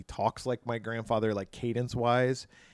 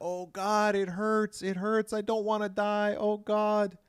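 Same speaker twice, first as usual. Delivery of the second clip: very high, slow, drawn-out anguished wailing; 11 semitones higher than usual. Retelling a film scene where Chrissy is pulled underwater, imitating Chrissy screaming in pain. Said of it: "She's screaming".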